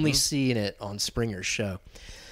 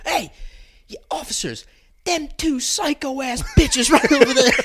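mock livid hollering, very high-pitched; 12 semitones higher, 5 dB louder than usual. Telling a story, speaker acts out a furious man calling police officers over: retelling a furious shout. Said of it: "He's still fucking furious".

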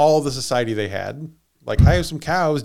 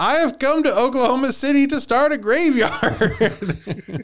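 play-acted shrill, very high drunk yell; 11 semitones higher than usual. Retelling a drunk man interrupting people again: retelling a drunk man's scream. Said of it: "he screams".

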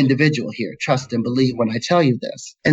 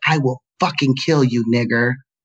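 put-on enraged male voice, furious tone. Retelling a grown man's threat from the teenage years: imitating an enraged man. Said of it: "he was red with rage".

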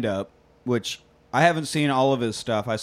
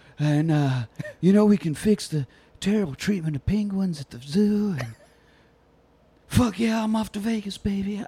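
put-on old politician voice, higher pitch; 6 semitones higher than usual. Imagining a politician pitching kids for money: bad Joe Biden impression. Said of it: "I don't know how to do a Biden impression".

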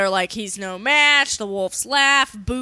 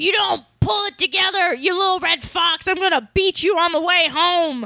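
put-on high-pitched hollering, scolding tone; 7 semitones higher than usual. Retelling a cartoon episode, acting out a coach's threat: yelling like a soccer dad. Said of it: "yelling like a soccer dad".

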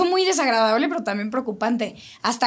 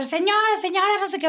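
mock shouting, high-pitched; 8 semitones higher than usual. Retelling how the taco man started yelling to them, retelling a shout. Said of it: "empieza a gritar".

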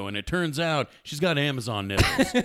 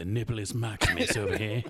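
put-on nature documentary narrator voice, lower and quieter; 5 semitones lower, 6 dB quieter than usual. Joking about a National Geographic kind of night: David Attenborough voice.

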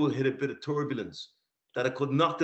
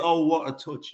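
put-on mixed Cockney and French accent; 3 semitones higher, 3 dB louder than usual. Quoting a co-commentator as Saka takes the ball down, in a Cockney French accent. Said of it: "There's a twang of London and French in that".

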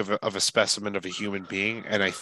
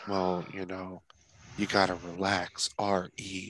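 flat monotone, level and unvarying throughout; 6 dB quieter than usual. Act out how he sounded at the first press conference, imitating someone monotone. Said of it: "he's monotone and just like".

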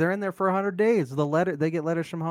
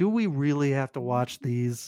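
normal talking voice

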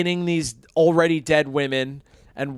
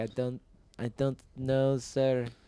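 mock-terrified, much quieter; 10 dB quieter than usual. Retelling a saleswoman's answer to his crude question; imitating a terrified Middle Eastern woman. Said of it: "A terrified Middle Eastern woman".

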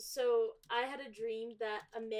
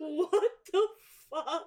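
mock scream, higher and faster; 6 semitones higher, 8 dB louder than usual. Retelling waking from a vivid nightmare, reenacting a scream. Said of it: "I woke up and screamed".

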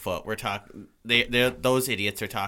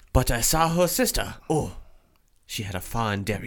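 put-on, fake British accent; 2 semitones higher, 3 dB louder than usual. Joking about a woman's sister, in a put-on british accent. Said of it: "went British".

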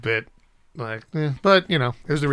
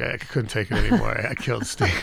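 put-on exhausted, tired-sounding speech. Retelling what Chris said on coming home: imitating exhausted Chris. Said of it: "he's all exhausted".

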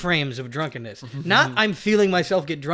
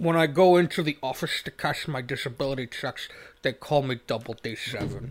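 put-on Scottish accent, said more quietly; 3 semitones lower, 6 dB quieter than usual. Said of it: "Sean Connery diabetes edition".

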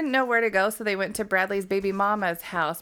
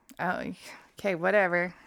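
ordinary delivery

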